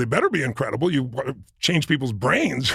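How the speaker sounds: ordinary talk, nothing marked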